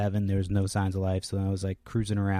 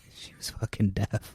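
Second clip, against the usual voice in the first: usual speaking voice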